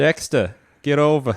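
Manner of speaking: put-on Chicago mobster accent. Speaker calling to the horse Dexter, in a mob accent. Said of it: "a mob accent".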